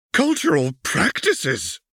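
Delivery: furious indignant outburst. A narrator reads one character's retort during an argument, angry exclamation. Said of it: "exclaims, angry to her bones".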